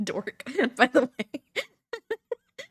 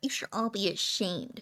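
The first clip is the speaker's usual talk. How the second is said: put-on nerd voice, much quieter; 3 semitones lower, 5 dB quieter than usual. Showing how the line would sound in a nerd voice. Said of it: "the nerd voice would have been great".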